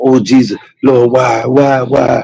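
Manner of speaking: fake, high, drawn-out anguished wailing cry. Showing a way of crying that the speaker says she did not cry: mock anguished crying. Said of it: "I wasn't crying like".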